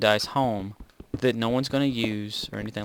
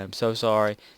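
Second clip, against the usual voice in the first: sarcastic, insincere tone. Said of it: "It was just being sarcastic".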